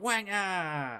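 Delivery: high, loud jeering cheer of "wanga".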